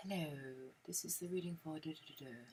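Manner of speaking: very quiet, soft, soothing bedtime-reading voice. Showing the kind of voice that puts you to sleep: calming, soft voice. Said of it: "that calming, soft".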